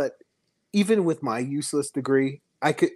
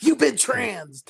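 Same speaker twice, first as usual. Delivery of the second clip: gruff, high, rough yelling in a German soldier voice; 9 semitones higher than usual. Joking about a Saving Private Ryan scene: imitating the German yelling. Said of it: "Is that what the German was yelling?".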